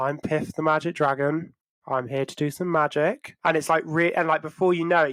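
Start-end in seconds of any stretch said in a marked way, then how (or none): 0.0-3.4 flat, totally nonchalant monotone. Describing a performer's impressive act, Piff the Magic Dragon monotone. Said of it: "really nonchalant, like he has this like kind of monotone way of talking".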